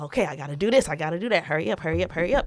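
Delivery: frazzled, rushing, hurried delivery. Retelling hurrying a sick kid to get ready: imitating own frazzled rushing. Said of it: "I'm getting so fucking frazzled".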